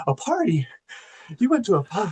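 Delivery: breathy, high-pitched delivery, line breathed out. Quoting an actress's line from a film: breathy Madeline Stowe impression. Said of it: "That's a good Madeline Stowe impression".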